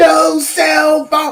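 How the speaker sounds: put-on, shrill, very high-pitched screeching yell. Retelling how a poll worker reacted to a phone: imitating someone screaming. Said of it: "she just started screaming".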